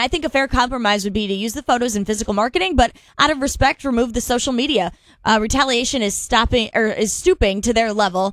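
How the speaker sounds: usual speaking voice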